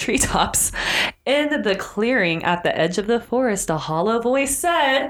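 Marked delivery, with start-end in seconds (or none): none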